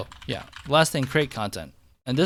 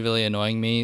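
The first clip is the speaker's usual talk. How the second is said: ordinary talk, nothing marked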